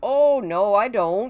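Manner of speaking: put-on thick Yooper Upper Peninsula accent with long O's. Retelling an uncle's reply when teased about his accent, Uncle Pat's Upper Peninsula accent. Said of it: "one of my uncles has got the heaviest Upper Peninsula accent ever".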